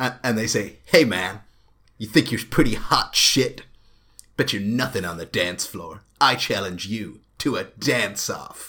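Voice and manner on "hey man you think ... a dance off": loud, generic American bully voice. Voicing eagle-headed characters challenging someone to a dance-off, in a generic American bully voice. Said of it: "they sound just like a really generic American bully".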